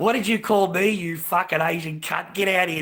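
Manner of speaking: play-acted, screamed, yelled abuse. Retelling a neighbour banging on the front door: imitating someone screaming. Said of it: "She's screaming at the front door".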